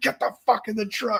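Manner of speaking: mock all-out furious yell, very high. Telling a story about a heavy grinder, the speaker retells an angry scream at him. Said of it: "I'm screaming at him".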